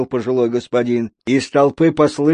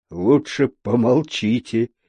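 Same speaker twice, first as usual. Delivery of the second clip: muttering, quieter; 2 semitones lower, 4 dB quieter than usual. A police officer speaks to a man: muttering. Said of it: "пробормотал полицейский".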